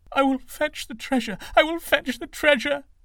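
very high, loud, quavering, trembling cry. The servant rises and answers King Prasnajit in a trembling voice. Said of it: "said in a trembling voice".

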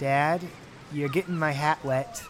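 usual speaking voice

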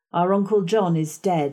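plain

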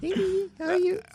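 put-on cutesy baby talk, pitched way up high. Friends showing how they talk to their girls, one uses a baby talk voice. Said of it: "I do the baby talk".

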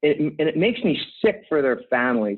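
usual speaking voice

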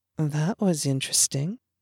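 soft, calm half-whisper, voice hushed. Felicity calmly joins the narrator on the path after a man yells, half-whispering.

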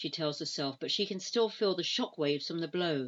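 ordinary delivery

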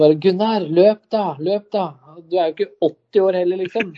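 mock high hollered shout, "du" drawn out. Recounting a long pass to a teammate years ago, retelling a shout. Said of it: "Og så skreik jeg til Gunnar".

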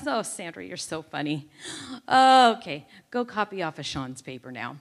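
mock laughing while speaking. Retelling how a man they called the dinosaur laughed at her, imitating his laugh. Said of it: "He literally laughed like this".

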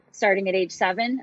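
normal talking voice

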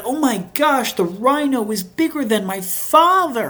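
put-on high, earnest, totally serious little-girl shout. Retelling a little girl at the zoo seeing a rhino: imitating a girl yelling seriously. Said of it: "she yelled".

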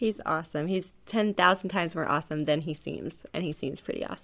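soft, quiet voice.

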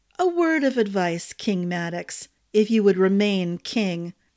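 plain reading voice

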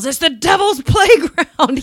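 mock theatrical, dramatic, high shouted proclamation. Describing what a man did when he kicked the wall, retelling a yell. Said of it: "And he yells".

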